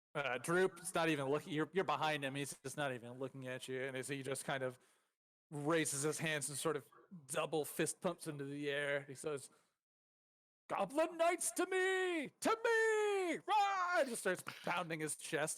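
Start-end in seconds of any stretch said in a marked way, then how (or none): 10.6-14.0 very high, very slow, drawn-out, excited battle shout. Voicing a goblin king rallying his knights: excited battle shout. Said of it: "He just keeps shouting that".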